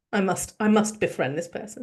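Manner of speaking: normal talking voice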